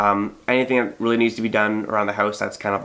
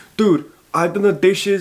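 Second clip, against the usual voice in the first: put-on Brooklyn accent, voice pitched very high; 10 semitones higher, 4 dB louder than usual. Giving an example of someone resenting another over chores: brooklyn accent. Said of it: "I'm not sure I have a Brooklyn accent".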